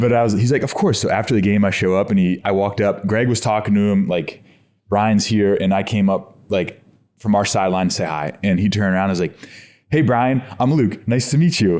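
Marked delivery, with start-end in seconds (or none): 9.9-11.8 nerdy, dorky, eager delivery. Retelling meeting Luke after a game, imitating Luke's dorky greeting. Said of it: "You sound like a dork".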